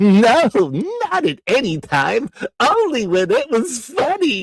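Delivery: bouncing, zigzagging pitch, loud and high. Asked for a favorite movie line, speaker quotes it in a Roger Rabbit voice. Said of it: "that good of a Roger Rabbit".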